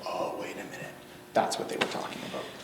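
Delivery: soft, hushed, unvoiced whisper with sudden realisation.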